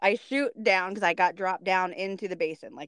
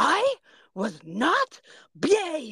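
put-on high, very slow, indignant little girl voice. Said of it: "she looks back and she goes".

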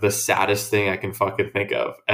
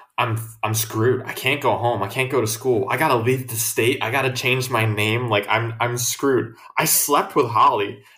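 ordinary talk

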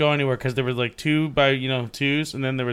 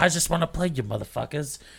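put-on aggressive, pushy, drunken-sounding voice; 2 semitones higher, 3 dB quieter than usual. Retelling what drunk, aggressive Gina kept saying: imitating Gina, aggressive and drunk. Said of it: "And Gina was just more of the factor of".

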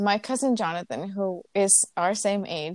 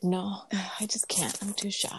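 put-on cool teenage boy voice, soft and slow; 7 dB quieter than usual. Quoting a guy who wouldn't say what he wanted to tell her, cool teenage guy voice. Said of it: "just imagine cool teenager man voice".

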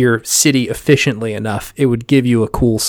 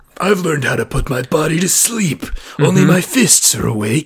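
higher-pitched, theatrical stage voice; 5 semitones higher than usual. Showing off a best impression, Vegeta doing Shakespeare. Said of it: "sounded like Vegeta doing Shakespeare".

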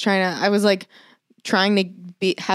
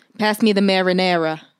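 put-on New Jersey accent; 4 dB louder than usual. Mimicking how a man from new jersey talks: put-on new jersey accent. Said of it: "That's my New Jersey accent".

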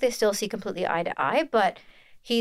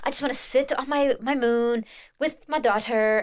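haughty, self-important, pompous, pretentious voice; 4 semitones higher than usual. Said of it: "he just sounds like a pretentious gold".

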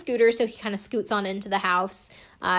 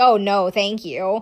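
slow, sarcastic, courteous tone; 5 dB louder than usual. Recapping a show, quoting a man's reply to the PA holding the door, mock-sarcastic retelling. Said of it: "kind of sarcastically says to the PA".

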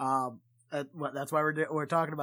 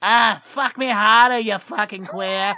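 very loud, drawn-out put-on Boston accent; 6 semitones higher, 12 dB louder than usual. Imitating a woman from boston: put-on boston accent. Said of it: "a woman from Boston, just having to listen to them".

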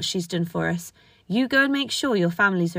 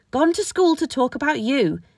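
sharp, snappish, high-pitched snapped tone; 6 semitones higher, 3 dB louder than usual. Narrating a story, a woman snaps back at a girl who interrupted her: snapping back. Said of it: "Amelia snapped back".

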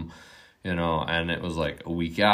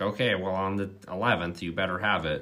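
put-on snarky old woman voice; 2 semitones higher than usual. Retelling what an old lady said about a rent deadline: imitating a snarky old lady. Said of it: "she was kinda snarky old lady".

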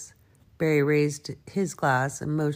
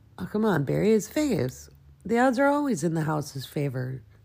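plain reading voice

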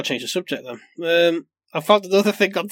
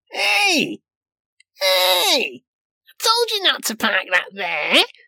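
annoyingly chummy, drawn-out advert voiceover; 8 semitones higher than usual. The speaker mocks an annoying tyre advert's voiceover; imitating a chummy tyre-ad voice. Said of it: "I don't know if I did it justice with my impression".

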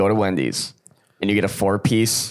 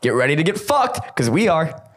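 all-out, pitched-up, hyped shouting; 8 semitones higher than usual. Opening the podcast after a long break, yelling. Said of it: "I forgot how much you yell".

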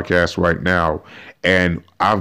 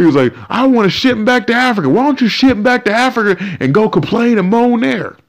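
forced, put-on country accent, pitched very high; 4 dB louder than usual. Speaker quotes a man from california, in a mock redneck country accent. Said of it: "how rednecks can have accents in California".

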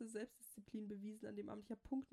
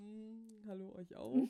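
slow, loud, dead-tired, wrecked-sounding voice; 6 dB louder than usual. Retelling greeting others at breakfast after drinking, imitating own hungover voice. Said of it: "weil ich war richtig tot".

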